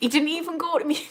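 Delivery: high voice, talking through laughter. Speaker talking about their dad, laughing while talking. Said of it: "Sorry, I'm just laughing".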